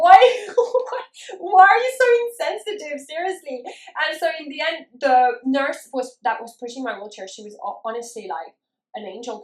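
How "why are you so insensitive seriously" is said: acted-out crying, much higher, louder, slower. Retelling her hospital delivery, the speaker acts out her past self: retelling her own crying.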